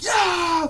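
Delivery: screaming, high pitched and loud.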